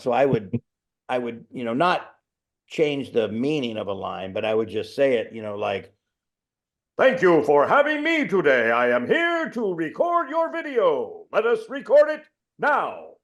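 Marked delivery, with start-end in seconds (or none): 6.9-13.0 goofy, very high, drawn-out silly voice. Showing how they would deliver a video intro line: goofy and silly. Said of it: "just make it goofy and silly".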